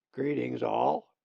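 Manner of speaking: raspy, rough, rasping raven voice. Narrator reading a story voices a raven greeting everyone, raspy raven voice. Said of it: "said this odd looking raven in a raspy voice".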